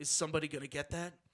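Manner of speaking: acted deep, brooding voice. Retelling a story from a film set, imitating Jim's very low voice. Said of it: "like very low".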